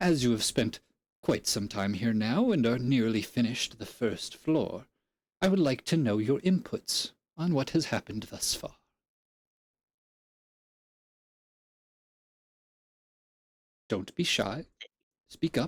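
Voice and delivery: echoing, crackling disembodied voice. Game master voicing the tomb's unseen custodian questioning the players, crackling disembodied voice. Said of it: "a slight like crackling noise".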